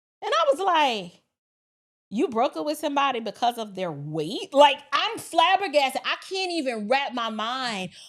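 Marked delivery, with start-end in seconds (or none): none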